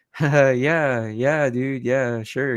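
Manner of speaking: mock nervous laughter. Describing a scene, the speaker acts out Dr. Fisher's reply to his devout boss: imitating Dr. Fisher's nervous laugh. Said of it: "He's like nervously laughing and sweating".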